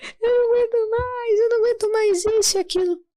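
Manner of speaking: play-acted crying out, pitched very high, sobbing. Retelling saying one could not bear it anymore: retelling own crying.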